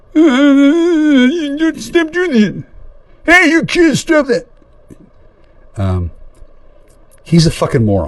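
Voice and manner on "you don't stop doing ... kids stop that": put-on very high nagging, scolding old-man voice, drawn-out "you". Retelling what an old man told kids to do: imitating an old man. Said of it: "fucking old man who fucking thought that".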